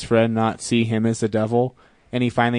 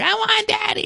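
mock screaming little girl voice, higher. Retelling a movie scene where a two-year-old girl screams: imitating a screaming little girl. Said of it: "two-year-old little girl screaming".

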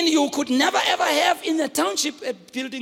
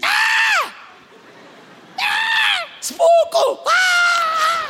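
acted very high, long, drawn-out, panicked, frightened screams. Telling of Jesus walking on the water, imitating the disciples screaming. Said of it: "the disciples screaming".

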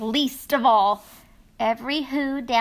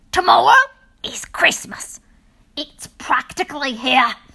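loud, snarling, sneering delivery; 3 semitones higher, 6 dB louder than usual. Narrator reading a character's line from the story, snarling with a sneer. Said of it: "he snarled with a sneer".

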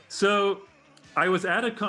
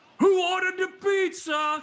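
put-on very high, shrill scream; 12 semitones higher than usual. Telling a story, the speaker acts out a guy screaming into a microphone over a band. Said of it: "screams into the microphone".

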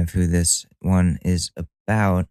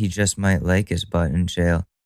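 ordinary delivery

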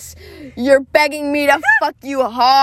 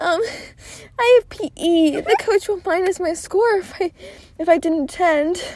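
put-on nervous, shy anime girl voice, much higher pitch; 6 semitones higher, 4 dB quieter than usual. Reading a story aloud, doing Olivia's line as a nervous anime shy girl. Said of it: "Say it nervously. Say it like an anime shy girl".

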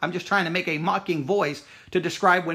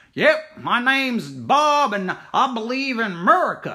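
broad Southern drawl laid on thick, slow, high; 5 semitones higher, 4 dB louder than usual. Explaining how to make a character sound foolish, using a thick southern accent. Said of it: "you'll go into a thick Southern accent, like".

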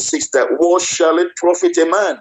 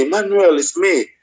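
mock weeping, tearful calling out through tears. Retelling an uncle calling out from hell: imitating someone weeping. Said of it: "this man has been weeping".

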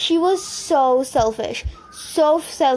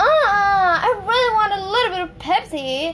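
mock shouting, much higher pitch; 7 semitones higher than usual. Speaker retells a woman who started shouting at them, mock-shouting. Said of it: "She started shouting at me".

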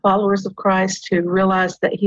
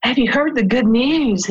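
eager, bursting with excitement; 4 semitones higher than usual. Retelling how mom greeted people before Easter: imitating mom's excited greeting. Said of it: "And she was so excited".

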